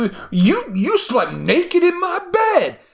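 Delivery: mock very high, drawn-out, swooping indignant meltdown. Retelling a film character's reaction: imitating someone losing it. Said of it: "she just fucking loses it".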